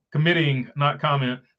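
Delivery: ordinary delivery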